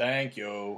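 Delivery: put-on "thank you" in Boston accent. Imitating how people in Boston say thank you, imitated Boston accent. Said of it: "whenever anybody in Boston, like a lot of times whenever they say thank you, they go".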